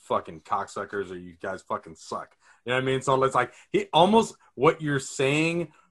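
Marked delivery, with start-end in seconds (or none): 0.0-2.4 put-on mutter, much lower and quieter. Discussing a TV character's hero speeches, imitating Homelander muttering under breath. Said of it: "under his breath".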